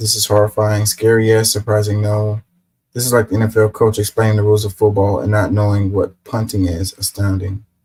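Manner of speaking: normal talking voice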